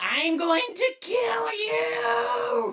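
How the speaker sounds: very high rising shriek, "you" stretched out. Narrating a scene and voicing the character Twit, screaming as Twit. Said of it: "Twit is just screaming".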